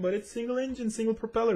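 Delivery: high-pitched, emphatic, insistent.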